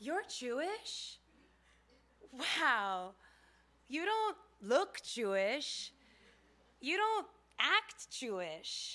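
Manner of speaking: warm, admiring voice.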